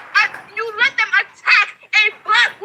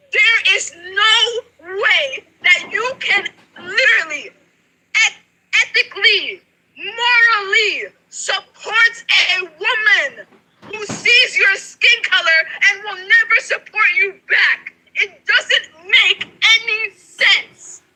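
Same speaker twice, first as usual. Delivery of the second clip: near tears, with a drawn-out "no". Talking to Nikki with hands shaking, saying she's about to cry again: about to cry. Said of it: "I am literally about to cry again".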